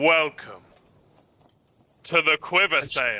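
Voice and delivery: grand, dramatic, slow, drawn-out, swooping theatrical delivery. Voicing a posing lord greeting the arriving party: very dramatic slow greeting. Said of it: "he very dramatically, slowly turns and says".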